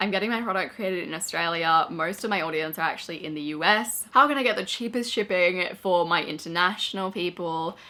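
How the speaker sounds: ordinary delivery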